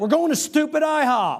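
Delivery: high, loud, irritated snappy delivery.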